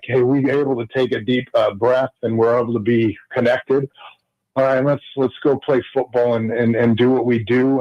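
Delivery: ordinary talk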